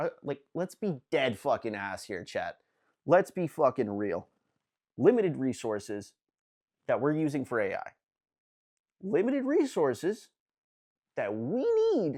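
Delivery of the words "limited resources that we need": voice cracking high mid-phrase, breaking on word. Streamer talking to chat, voice cracking. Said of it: "That was a voice crack there".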